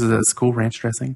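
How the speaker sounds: plain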